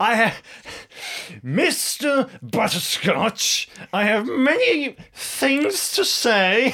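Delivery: grand, very high, slow, theatrical stage delivery. Voicing a character being dragged away, pointing: dramatic declaration. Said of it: "points very dramatically and says".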